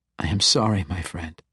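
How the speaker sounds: ordinary delivery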